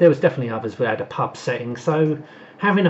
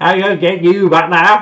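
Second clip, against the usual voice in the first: put-on American accent, higher and louder; 5 semitones higher, 8 dB louder than usual. Imagining how a character would sound in an American remake: Blakey with an American accent. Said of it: "imagine Blakey with an American accent".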